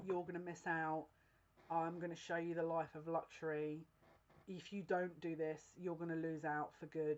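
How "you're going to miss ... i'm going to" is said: usual speaking voice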